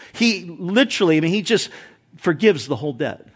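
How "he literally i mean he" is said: usual speaking voice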